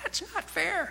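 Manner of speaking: high, squeaky little voice. Parent imitating children complaining, in a high, squeaky voice. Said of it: "in much more high, squeaky voices".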